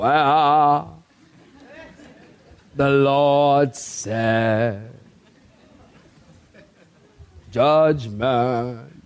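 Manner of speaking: very slow, lifeless preacher delivery, "wow" dragged out. Mocking how a dull preacher reads scripture: imitating a boring preacher. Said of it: "Don't be boring and".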